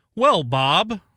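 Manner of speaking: loud, high game show host voice. Hosting a picks segment, answering a co-host's question in game show host voice. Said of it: "Is that my best game show voice?".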